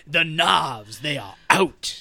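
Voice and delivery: low, Southern-accented cartoon rooster voice, holding forth. Quoting an English actor's character from a movie, in a Foghorn Leghorn voice. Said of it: "he's specifically Foghorn Leghorn".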